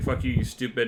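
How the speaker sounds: ordinary delivery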